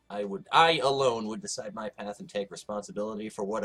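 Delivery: plain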